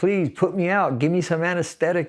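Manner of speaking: desperate, pleading begging cry. Recounting being taken to hospital after a stabbing, quoting their own pleas: retelling a desperate yell. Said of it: "just yelling".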